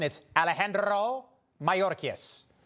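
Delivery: mock Spanish-accented voice.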